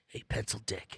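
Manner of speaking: breathy, whispered caped superhero voice. Speaker says he does the Batman voice, then uses the Batman voice. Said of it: "I do the Batman voice".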